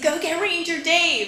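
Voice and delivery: high-pitched, slow, playful egging-on tone.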